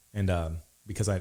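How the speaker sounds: ordinary talk, nothing marked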